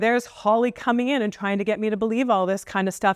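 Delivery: ordinary delivery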